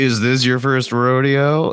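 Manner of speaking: put-on smug, self-satisfied, knowing tone. Retelling leaning over to someone at a rodeo: imitating own smug question. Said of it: "I smugly was like".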